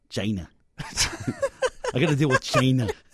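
exaggerated, showy put-on voice with wide pitch swings. Asked to say China the way Trump does: Donald Trump voice on China. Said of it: "say it in the Trump voice".

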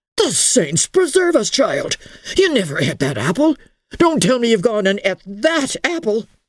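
aghast, horrified, high-pitched outburst. Lofty John learns Emily ate the apple from the stair, horrified. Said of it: "looked at Emily with a horrified face".

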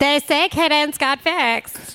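mocking, stock basic girl tone.

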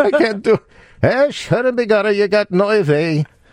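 shrill, very high, put-on Irish brogue. Trying to say oy vey in an irish brogue: irish brogue. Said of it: "say oy vey in a Irish brogue".

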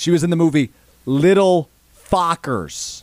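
very slow, deliberate, word-by-word delivery. Saying a line slow so everyone is on the same page, slow and deliberate. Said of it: "I'm gonna say it slow so we're all on the same page".

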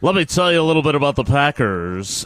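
clichéd radio-announcer voice. Talking into a microphone, showing off a stereotypical radio guy voice. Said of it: "That was my stereotypical radio guy".

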